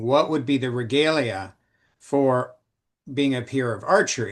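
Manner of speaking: ordinary delivery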